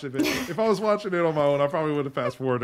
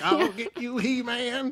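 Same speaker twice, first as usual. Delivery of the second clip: put-on cartoon villain voice, higher pitch; 10 semitones higher than usual. Retelling a chase scene on the stairs: Skeletor voice. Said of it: "He's Skeletor in this moment".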